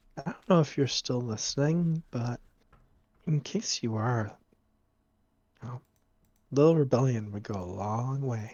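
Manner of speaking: very quiet, low mutter under the breath. Narrating as the group walks over, speaker voices Cass: Cass muttering under her breath. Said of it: "Cass mutters mutters under her breath and says".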